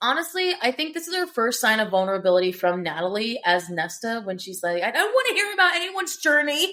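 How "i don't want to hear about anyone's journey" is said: very raw, upset outburst, pitched up. Quoting a scene's first sign of vulnerability, imitating Nesta's upset, raw line. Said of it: "she gets very upset and very raw".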